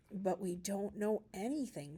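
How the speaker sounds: plain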